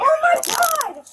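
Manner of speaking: raw, distressed, high-pitched yell. Being detained by officers, yelling. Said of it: "Stop yelling".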